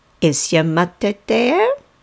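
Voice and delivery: put-on sing-song, swooping, slight Norwegian accent. Imitating Tanta asking on the phone when the speaker answered, in Tanta's accent. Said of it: "she sounded exactly like this".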